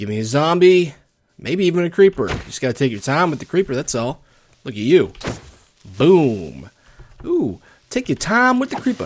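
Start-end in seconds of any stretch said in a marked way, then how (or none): 7.2-9.1 thick, heavy Texan accent, pitched very high. Talking about handling a creeper, the speaker says this with a thicker accent than usual. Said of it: "I said that with an accent".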